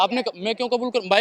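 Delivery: ordinary delivery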